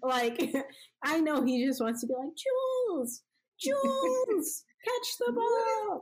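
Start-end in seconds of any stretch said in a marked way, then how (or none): 2.3-6.0 very high, slow yell, word stretched out. Show how he yells a teammate's name during a game, as a high Tom Brady yell impression. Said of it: "It's like that high".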